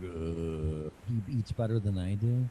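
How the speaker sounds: slow, groggy, half-awake zombie voice. Retelling what they say in the morning, imitating own zombie-like morning voice. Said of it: "like a zombie in the morning".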